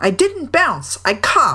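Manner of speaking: cross, irritated, high-pitched protesting tone. Reading Tigger's reply to his companions in a story, spoken crossly. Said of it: "said Tigger crossly".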